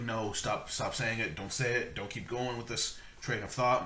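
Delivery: ordinary talk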